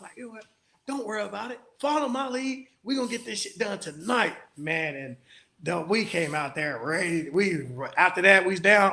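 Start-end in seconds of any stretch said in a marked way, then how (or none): 0.2-5.0 mock angry, pissed-off, take-charge delivery. Retelling what was said to the team during a game: reenacting being pissed off. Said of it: "I was pissed".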